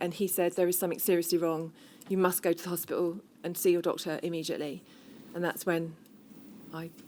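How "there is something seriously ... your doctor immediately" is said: usual speaking voice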